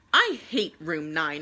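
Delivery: sulky, very grumpy, low grumble. Narrator who only played with a stick and an ant, very grumpy. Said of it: "I said very grumpily".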